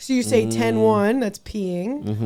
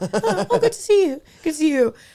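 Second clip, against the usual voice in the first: mock, really pleasant chatty tone, higher pitched; 8 semitones higher than usual. Retelling what was overheard through an earpiece in a bathroom: imitating really pleasant chatter. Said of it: "really pleasant, like".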